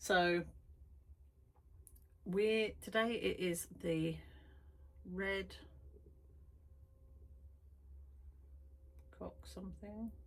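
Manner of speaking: words breaking up into giggles. Introducing today's painting to viewers, giggling. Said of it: "giggling at the word cock".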